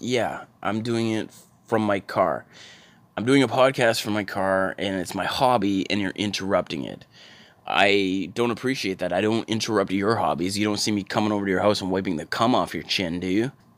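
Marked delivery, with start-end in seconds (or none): none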